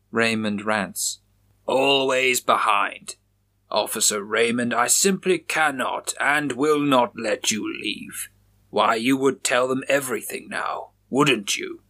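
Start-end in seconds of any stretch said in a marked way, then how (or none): 1.6-11.7 triumphant, taunting, gloating, crowing villain voice. Narrating a story, after Raymond rants at him, Chaplin replies, gloating. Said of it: "And I was chosen. / putting his extra round into the chamber. / Officer [name] unloads two shots through [name]'s sternum. / [name] gloated".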